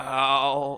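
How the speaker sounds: low, quiet pained groan, "ow". Voicing a character who fell on his back: low pained groan. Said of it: "you hear a low".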